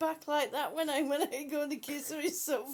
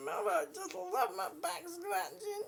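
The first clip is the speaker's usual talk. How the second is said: put-on dog voice, higher and quieter; 3 semitones higher, 4 dB quieter than usual. Speaking for the dog while scratching her back: voicing the dog. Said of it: "she says".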